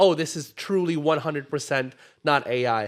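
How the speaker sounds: ordinary talk, nothing marked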